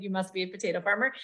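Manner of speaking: ordinary delivery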